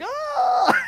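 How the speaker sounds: put-on very high, panicked, shrieking child's voice. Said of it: "and they're like".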